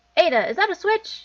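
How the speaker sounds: shouting. Asking a companion in a dark tunnel about a switch, yelling in someone's ear. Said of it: "Stop yelling in my ear!".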